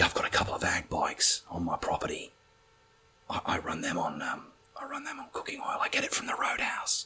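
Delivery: secretive, shady, hushed whisper. Retelling a man saying he runs bikes on cooking oil: imitating a man whispering. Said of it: "why are you fucking whispering?".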